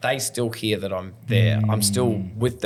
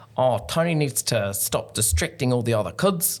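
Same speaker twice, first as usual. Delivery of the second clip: put-on New Zealand accent; 2 semitones higher than usual. Recalling his school reports, the speaker quotes one aloud in a put-on kiwi accent. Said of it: "I have to do a Kiwi accent".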